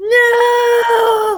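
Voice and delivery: dramatic anguished cry. Playing a character dropping to their knees: dramatic anguished cry. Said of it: "drop to my knees very dramatically".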